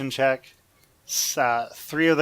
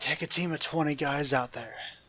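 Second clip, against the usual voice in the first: hushed, half-whispered voice; 7 dB quieter than usual. Storyteller voicing a character's instruction in the story, half-whispering. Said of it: "He whispers".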